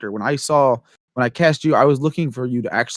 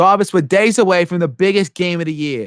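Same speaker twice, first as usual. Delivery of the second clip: loose, put-on Boston accent, pitched up; 5 semitones higher, 4 dB louder than usual. Showing how they originally played a character, in a put-on Boston accent. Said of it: "I gave him kind of a Boston accent".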